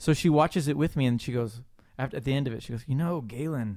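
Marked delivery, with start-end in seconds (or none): 2.9-3.8 raspy, rough-edged, scratchy put-on voice. Imitating her at the end of watching Next Generation: scratchy imitated voice. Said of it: "her voice is kind of scratchy. ... I just did it".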